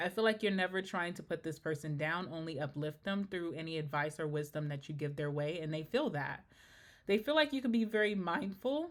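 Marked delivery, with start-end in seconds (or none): 7.1-8.9 voice cracking and breaking mid-line. Telling the listener how others see them, voice cracking. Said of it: "my voice is cracking".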